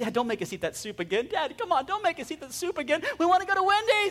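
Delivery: put-on high, whiny, begging kids' voices. A father retelling his daughters begging from the back seat: imitating kids whining. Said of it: "Stop whining".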